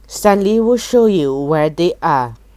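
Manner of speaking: plain reading voice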